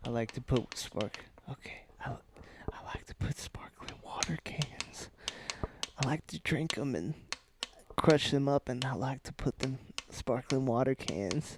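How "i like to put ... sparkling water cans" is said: quiet asmr-style whispering.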